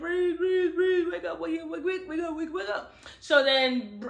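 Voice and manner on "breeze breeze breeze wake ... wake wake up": mock tearful, high crying, repeated words. Retelling a plot where one character finds another unconscious: imitating someone crying. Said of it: "he crying like".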